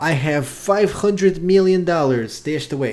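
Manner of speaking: put-on Russian-accented voice. Recapping a movie's cartel leader talking to the main character, El Tiburon Russian accent. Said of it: "I'm I'm not doing a poor Russian accent".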